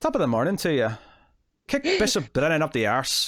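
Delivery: clumsy, sing-song Irish accent, not landing. A speaker attempts an accent mid-conversation, bad irish accent. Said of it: "I can't really do it".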